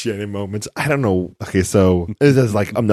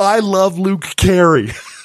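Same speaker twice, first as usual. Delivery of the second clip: shrill, very high, very slow, drawn-out yell; 12 semitones higher, 5 dB louder than usual. Retelling what Shannon yelled during a pause: imitating Shannon yelling. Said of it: "Shannon just yells".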